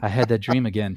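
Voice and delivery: put-on dead-level deadpan, no expression at all. Acting out a character waking from a dream in an imagined parody: very flat delivery. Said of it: "But he says it very flat".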